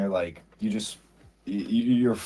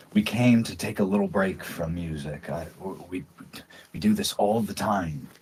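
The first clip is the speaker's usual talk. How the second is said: muttering under his breath; 2 semitones lower than usual. Voicing a character who shakes his head over soup: muttering under his breath. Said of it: "he kinda mutters under his breath".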